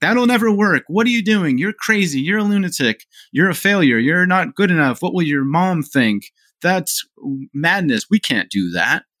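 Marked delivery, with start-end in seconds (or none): 0.0-8.1 shrill, screaming shout. Speaker acting out their own brain shouting at them, screaming. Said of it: "starts screaming at us like".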